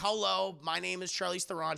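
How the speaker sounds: usual speaking voice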